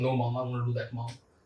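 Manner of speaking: low, soft try-hard cool voice. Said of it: "So they want to sound cool".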